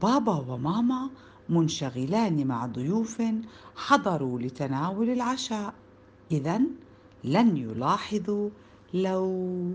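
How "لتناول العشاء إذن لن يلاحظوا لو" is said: plain reading voice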